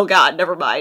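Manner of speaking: plain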